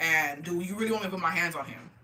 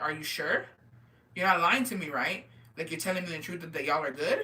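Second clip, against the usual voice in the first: plain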